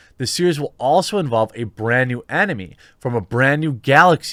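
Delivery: ordinary delivery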